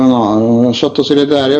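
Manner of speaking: ordinary delivery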